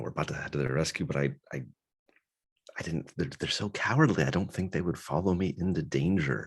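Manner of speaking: whispering in a put-on character voice. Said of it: "I'm kinda whispering this to her".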